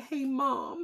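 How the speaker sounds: small, high, quavering little voice near tears. A mother retells her son reacting to news they can't hug, imitating a quivering little voice. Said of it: "his little voice was quivering".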